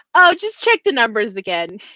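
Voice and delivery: play-acted sarcastic jab. Imitating a film character's remark to his boss: imitating someone being sarcastic and cheeky. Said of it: "kind of almost sarcastic and cheeky he is".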